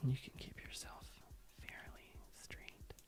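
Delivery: soft, very quiet ASMR whisper. Asked by another speaker to use an asmr voice while continuing instructions, asmr voice. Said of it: "Use your ASMR voice".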